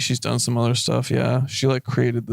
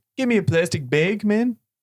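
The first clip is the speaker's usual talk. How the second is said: put-on Chicago Midwest accent, pitched up; 8 semitones higher than usual. Two Midwesterners trying out Chicago accents together: Chicago accent. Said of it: "we can do Chicago accents".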